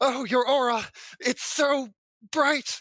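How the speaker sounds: very high, loud, gasping, theatrical, overwrought swoon. Collapsing on the floor in character at a visitor's aura: dramatic gasping. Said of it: "collapses on the floor, writhing".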